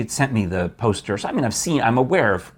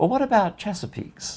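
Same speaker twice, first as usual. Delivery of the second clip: put-on Southern Virginia accent, pitched way up; 11 semitones higher than usual. Retelling what Carol said in the background on the phone, Carol's Southern Virginia accent. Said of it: "So Southern Virginia accent".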